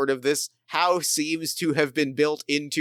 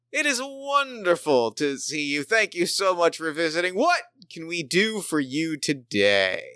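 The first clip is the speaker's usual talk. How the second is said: put-on half predatory, half delighted tone; 2 semitones higher than usual. Voicing a giant crocodile greeting a visitor, mock half predatory, half delighted. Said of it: "kind of half predatory, half delightedly".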